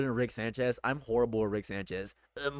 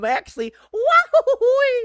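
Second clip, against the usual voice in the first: put-on cartoon dog voice, higher and louder; 11 dB louder than usual. Trying out a voice after thinking of Goofy: Goofy voice. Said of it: "That's like Goofy".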